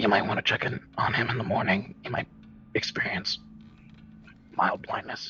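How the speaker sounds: quiet, breathy whisper. Voicing a character who whispers a warning to another character: whispering. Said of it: "just kinda whispers over to Perry".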